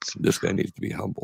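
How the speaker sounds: play-acted, dead-serious, menacing, psychopathic whisper. Teasing the other speaker by repeating their words, imitating a scary psychopathic tone. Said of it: "almost in a scary psychopathic type of tone".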